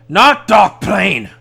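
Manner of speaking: very loud, high, snarling angry growl. Voicing an angry head that growls and hits the ground: angry growling character. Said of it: "The angry head growls and hits the ground".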